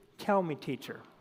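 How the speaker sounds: put-on sarcastic voice. Retelling Simon's reply to Jesus: imitating a sarcastic reply. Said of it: "see the sarcasm drip off of Simon".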